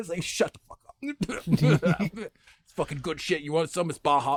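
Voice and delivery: crude, foul-mouthed priest character voice. In a confessional-booth role-play scene, the speaker answers as a foul-mouthed priest voice. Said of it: "he was a full on fucking priest".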